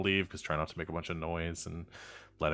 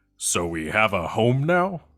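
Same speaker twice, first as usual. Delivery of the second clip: very loud, booming, swooping rising tone; 4 semitones higher, 12 dB louder than usual. Narrating a scene where a character appears in a flash of light: very loud voice. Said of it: "in a very loud voice says".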